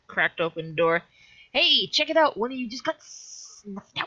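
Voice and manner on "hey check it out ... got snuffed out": high, yelled, mocking, jeering shout. From a cracked-open door, yelling out to the closest guy, a taunt. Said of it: "I am going to yell out".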